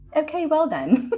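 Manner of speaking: put-on British accent. Imitating how Coach Tank would react: Coach Tank with British accent. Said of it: "In the British accent and everything".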